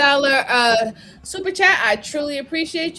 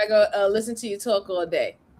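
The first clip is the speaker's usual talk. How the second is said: ordinary talk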